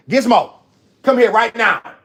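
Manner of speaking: loud, high-pitched calling. Interrupting a story to call someone over: raised voice. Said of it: "raised my voice a little bit".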